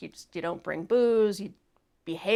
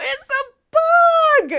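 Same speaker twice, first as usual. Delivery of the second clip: very high, very loud play-acted sobbing wail; 11 dB louder than usual. Retelling a bug in the drinking glass at five in the morning: imitating crying. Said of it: "crying my eyes out".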